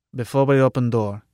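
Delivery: ordinary delivery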